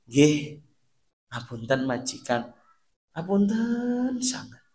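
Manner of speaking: very slow, gentle, soft, humble tone. Apologizing to an employer after a mistake: very slow and soft. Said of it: "Mesti ngomongnya alon banget".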